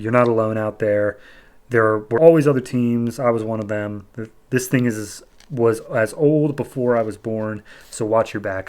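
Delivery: ordinary talk, nothing marked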